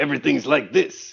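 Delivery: creaky, rough character voice.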